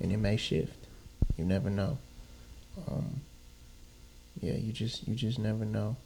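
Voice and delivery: quiet hushed talk. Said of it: "you got me talking all quiet".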